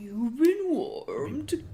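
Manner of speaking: bad, ugly, horrible put-on bully voice. Showing how a microwave bully character should sound: horrible put-on bully voice. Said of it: "I think you should have a horrible voice".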